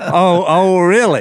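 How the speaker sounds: half-sarcastic disbelief. Speaker retells replying to a man who says he's ready, retelling an almost sarcastic reply. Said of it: "I was almost sarcastically".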